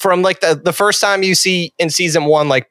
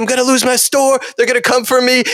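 high-pitched, raised yelling; 8 semitones higher than usual. Retelling a tv scene where a character comes in yelling: imitating someone yelling. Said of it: "he comes in yelling at Tony".

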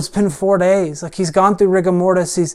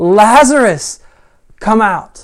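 mock booming, loud, authoritative shout; 3 semitones higher, 4 dB louder than usual. Speaker retelling how Jesus calls a dead man out, retelling a loud shout. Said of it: "In this loud voice, he shouts".

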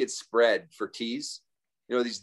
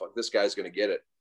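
mock-angry, acted-out, faster; 3 semitones lower than usual. Retelling being kept awake by a drunk man screaming, acting out past self: mock-angry. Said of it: "I was angry that I couldn't sleep".

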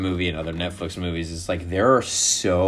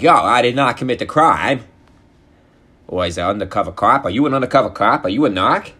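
loud, raised Boston Irish gangster accent; 5 semitones higher, 7 dB louder than usual. Describing a movie about Irish gangs in Boston, imitate how everyone talks: Boston Irish gangster accent. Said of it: "So everybody talks like this".

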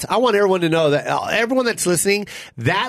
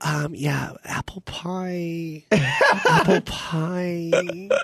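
put-on cutesy sweet voice; 4 dB quieter than usual. Role-playing a girl on a date answering the waiter, cute voice. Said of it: "When they say it cute like that".

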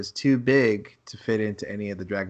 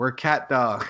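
put-on scream, higher; 4 semitones higher, 4 dB louder than usual. Retelling walking into a party in costume: retelling screaming. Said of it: "we walked into the party just screaming".

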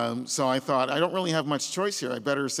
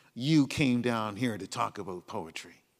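mock sneering tone, lower; 4 semitones lower, 4 dB quieter than usual. Retelling what a guard said on the platform: imitating a sneering tone. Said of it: "he said with a sneer".

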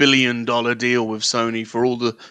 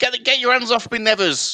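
put-on high-pitched British accent. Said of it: "They say".

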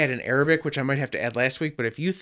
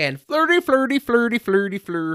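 high, put-on Swedish-sounding gibberish babble; 7 semitones higher than usual. Welcoming a newcomer to the world of cars, then breaking into a Swedish Chef voice. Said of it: "Now you're just doing Swedish Chef".

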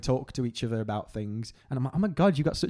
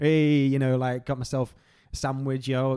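ordinary talk

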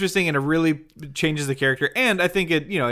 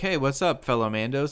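ordinary talk, nothing marked

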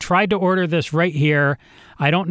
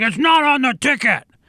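mock yelling with a pitched-up voice; 7 semitones higher than usual. Retelling the guy's reply about a missing order: imitating someone yelling. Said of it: "starts yelling at me".

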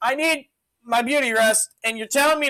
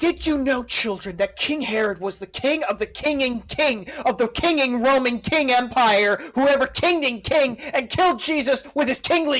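exaggerated, mocking put-on voice. Answering someone's hot take with an impression of him, mocking impression of a guy. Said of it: "I'm going to do an impression of this guy".

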